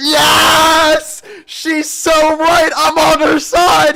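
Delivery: shrill, very loud, high-pitched excited shout. Siding with a woman you have just heard in the middle of an argument, yelling. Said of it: "I'm sorry I yelled".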